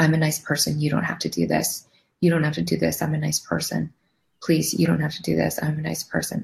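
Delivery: crying while speaking. Speaker recounts pleading with the man attacking her, retelling sobbing pleas. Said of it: "I was sobbing, just full sobbing, could not stop crying".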